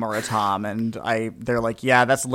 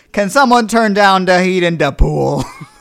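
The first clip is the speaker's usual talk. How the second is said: very loud, pitched-up put-on drunk New York accent; 8 semitones higher, 10 dB louder than usual. Retelling what she said in the pool: put-on drunk New York accent. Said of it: "she turned it into like a New York accent".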